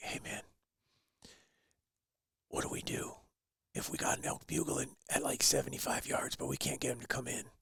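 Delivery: very quiet whispered words. Retelling a friend's phone call from an elk hunt: imitating a whisper. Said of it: "and he's whispering".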